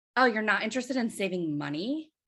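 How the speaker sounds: mock self-satisfied, smug, sly tone. Retelling a door-to-door seller's reply to a refusal: imitating a smirking question. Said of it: "with a smirk on her face".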